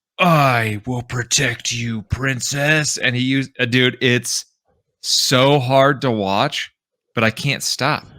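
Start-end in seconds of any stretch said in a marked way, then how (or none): 0.2-3.0 bouncy, exaggerated, animated anime-style voice. Speaker imitates a guy from cringy social media reels, in an animated anime voice. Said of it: "He gets like this like animated like anime voice".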